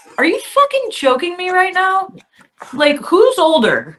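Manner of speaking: high, exasperated, incredulous outburst.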